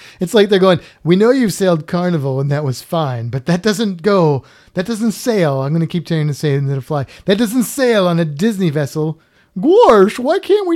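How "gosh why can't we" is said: silly, goofy cartoon voice, high and loud. Joking about Disney cruise rules, doing a Goofy impression. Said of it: "That was my goofy impression".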